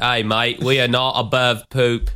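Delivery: fake Australian accent. Retrying a line after a co-host remarks on it, in a fake Australian accent. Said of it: "there's your Australian accent again".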